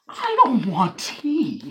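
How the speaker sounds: drawn-out swooping pitch. Imagining a conversation with a partner: Ryan Reynolds impression. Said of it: "That was a good impression".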